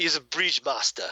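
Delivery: put-on Jamaican accent. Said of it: "I apologize for that accent".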